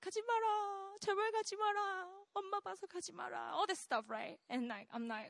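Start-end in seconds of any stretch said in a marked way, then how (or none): 0.0-3.5 mock very slow, high, drawn-out tearful sobbing plea. Recounting leaving home as his mom pleads with him: imitating mom crying her eyes out. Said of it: "She's like crying her eyes out".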